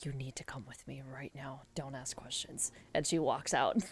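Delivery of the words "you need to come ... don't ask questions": urgent, hushed, whispered voice. In a role-play scene, a character pulls someone aside; hushed whispered tone. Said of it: "almost like in a whispered, like hushed tone".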